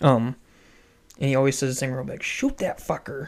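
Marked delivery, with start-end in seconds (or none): 2.2-3.3 quiet mutter under breath, higher and slower. Retelling what grandpa always says when coaching a shot, muttered under breath. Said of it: "under his breath".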